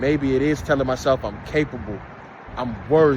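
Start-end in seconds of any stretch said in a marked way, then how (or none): 1.2-3.2 low voice with added bass. Listing self-affirmations to tell yourself, deep bassy voice. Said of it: "and I said with some bass".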